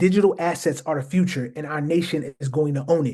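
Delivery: ordinary delivery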